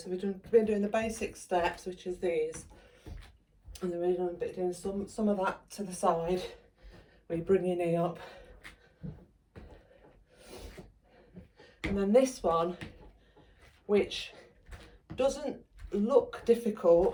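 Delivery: winded, breathless voice. Mid-workout, showing viewers the step moves done so far, out of breath. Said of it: "as you can hear, I'm quite out of breath".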